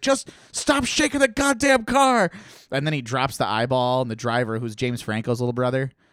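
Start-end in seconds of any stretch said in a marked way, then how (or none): 0.0-2.3 acted, very high, shrill yell. Retelling a car-chase scene where a man yells at the driver, imitating someone yelling. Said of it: "he's like yelling at the driver".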